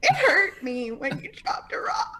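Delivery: high, slow, swooping sob through every word. Voicing a character standing there after being hurt: crying in character. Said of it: "Ingrid's just standing there crying like".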